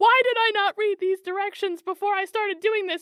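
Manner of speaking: very high, very loud screaming outburst. Retelling what a man started screaming: imitating someone screaming. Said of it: "And then he starts screaming".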